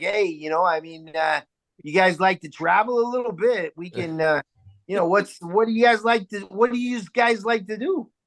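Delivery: put-on Chicago accent. Speaker in Chicago shows how they talk to people at the table: imitating a Chicago accent. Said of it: "Is that how we sound?".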